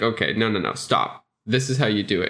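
ordinary talk, nothing marked

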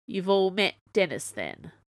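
ordinary delivery

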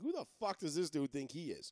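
ordinary talk

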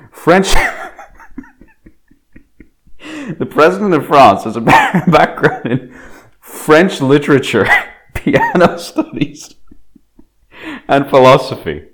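talking through laughter. Reading out a president's background, laughing while talking. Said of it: "I can't do this with a straight face".

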